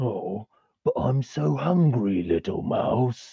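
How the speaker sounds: slow, drawn-out, big monster character voice. The game master voices an Oni reaching into the carriage: Oni monster voice. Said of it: "as the Oni starts climbing into the".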